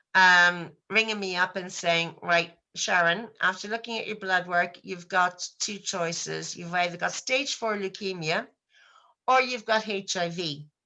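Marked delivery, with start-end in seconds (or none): none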